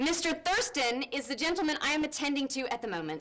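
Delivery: shouting. Repeating to a customer which gentleman is being attended to, shouting. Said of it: "Don't shout. I'm not deaf".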